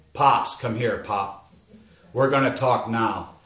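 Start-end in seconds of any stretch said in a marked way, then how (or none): none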